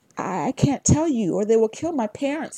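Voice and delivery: stammering. A kid answers a man who has threatened him, stammering. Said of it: "he stammered".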